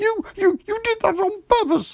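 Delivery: very high, sputtering, spluttering delivery. Narrator reads the line of a character being scrubbed in a bath, spluttering. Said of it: "spluttered Piglet".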